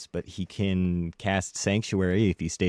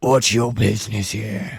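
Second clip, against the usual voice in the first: loud, gurgling, gargled undead voice; 3 semitones higher, 8 dB louder than usual. Voicing an undead soldier questioning an approaching traveler: gargled undead voice. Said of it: "a gargled voice, because, you know, he's an undead".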